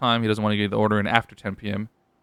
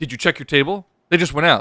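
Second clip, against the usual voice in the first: mock snotty, high, snippy, attitude-laden know-it-all tone; 6 semitones higher, 4 dB louder than usual. Retelling a man's reply in the kitchen about her appetizers, imitating a snippy attitude. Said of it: "with the most attitude ever".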